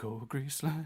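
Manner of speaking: muttered under breath. Imagining a film character driving off after a rival's fall, the speaker voices him: muttered under breath. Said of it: "he's like under his breath".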